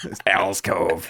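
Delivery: put-on old smoker's voice. Explaining the name of Al's hangout, doing Al as an old smoker. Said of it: "she's an old smoker when I do her voice".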